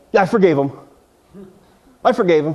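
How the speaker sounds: put-on, mock begrudging, reluctant, unconvincing tone. Imitating people who claim they forgave someone: imitating a grudging "i forgave them". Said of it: "why are you saying it like that".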